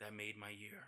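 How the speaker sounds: muttered under breath. Speaker repeats what a man told his brother as the speaker walked away: muttered under his breath. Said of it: "tell his brother under his breath".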